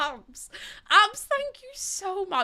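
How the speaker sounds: choked up, near tears. A streamer thanking a viewer for a kind message, tearing up. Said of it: "I'm literally tearing up".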